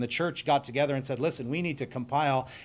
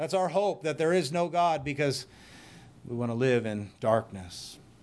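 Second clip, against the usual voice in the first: ordinary delivery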